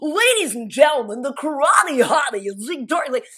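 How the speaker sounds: put-on loud, over-the-top, old-school fight ring announcer voice. Retelling joking on set about an old school intro: imitating an over-the-top announcer voice. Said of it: "we were doing announcer voice".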